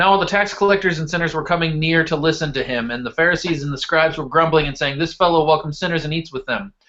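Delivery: rapid speed-read, rattled off quickly. Speaker reading a long scripture passage aloud to listeners, speed reading. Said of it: "I'm going to kind of speed read through this".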